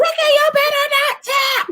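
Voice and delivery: loud scream, pitched very high. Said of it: "And I'm screaming".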